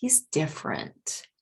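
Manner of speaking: downward tune across "he's different". Quoting how people say someone is different, falling pitch across he's different. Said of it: "it's like a down intonation".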